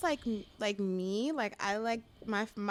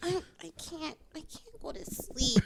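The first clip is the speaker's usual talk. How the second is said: put-on baby talk, pitched higher; 6 semitones higher than usual. Retelling what she says to a guy in bed: imitating own baby voice. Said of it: "And then the baby voice works".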